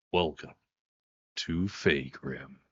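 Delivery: hushed, dramatic narrator-style delivery. Speaker announces the voice, then introduces the world map: dramatic narrator voice. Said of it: "Dramatic narrator voice".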